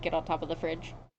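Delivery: ordinary talk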